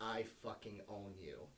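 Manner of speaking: close, soft, secretive stage half-whisper. Retelling words half-whispered in the ear during a scene: imitating a half-whisper. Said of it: "she whispered in my ear".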